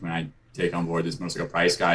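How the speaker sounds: ordinary talk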